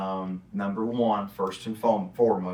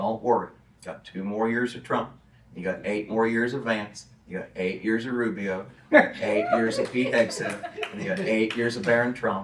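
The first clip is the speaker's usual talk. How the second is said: ordinary talk, nothing marked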